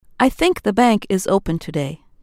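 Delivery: confident, self-assured, matter-of-fact delivery. First example sentence in a lesson on hearing confidence: more confident. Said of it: "you can hear more confidence in the speaker's voice".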